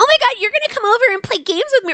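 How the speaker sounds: mock, put-on childish voice. Mocking how a game character invites someone over: imitating a childish voice. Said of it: "It sounds like she's like".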